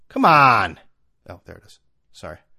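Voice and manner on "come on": loud, impatient shout. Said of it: "Sorry, I yelled right in the camera".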